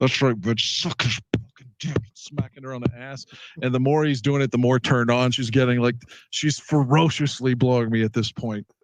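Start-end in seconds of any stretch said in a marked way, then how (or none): 0.0-2.0 put-on speaking through gritted teeth. Retelling what a friend said during a sexual encounter: Michael through gritted teeth. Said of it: "Like he's like gritting his teeth".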